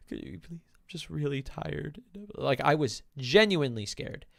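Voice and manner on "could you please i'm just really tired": soft, choked-back, whimpering, pleading, holding back crying. Speaker retells what she said to a woman while scared, retelling holding back whimpers. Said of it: "I was like holding in my whimpers".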